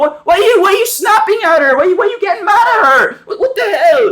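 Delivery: very high, rushed, complaining tone. Recapping a show, imitating Ronnie complaining at Lily, mock complaining as Ronnie. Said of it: "even Ronnie starts complaining again".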